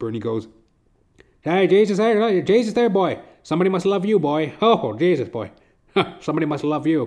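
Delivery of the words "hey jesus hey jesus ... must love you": put-on loud, high-pitched Newfoundland accent. Retelling what a Newfoundland man said after the speaker jumped up: imitating Bernie's Newfoundland accent. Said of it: "this little newfie guy".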